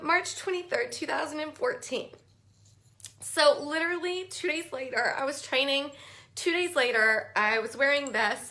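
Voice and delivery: weepy, choked-up, crying through the words. Telling a personal story while live, crying. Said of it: "That's I think that's why I'm crying".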